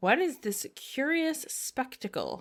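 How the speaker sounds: soft, lofty tone dripping with disdain. Quoting a character's line from the story, imitating a disdainful tone. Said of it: "I can just hear the like disdain in that".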